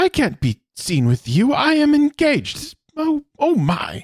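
very high, sing-song, swooping robot voice. Describing a helpless princess character, doing her lines in the C-3PO voice. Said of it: "it's like the C-3PO voice".

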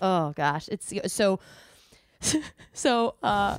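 very slow words spoken through laughter. Reacting to another speaker's joke, laughing while talking. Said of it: "I'm just laughing so much".

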